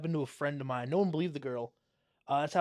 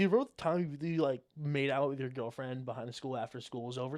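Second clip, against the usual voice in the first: ordinary talk, nothing marked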